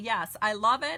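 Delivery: ordinary talk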